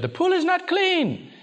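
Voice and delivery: put-on very high-pitched, accusing, complaining yell. Recounting a woman at the pool, the speaker retells how she yelled. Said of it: "she just yelled".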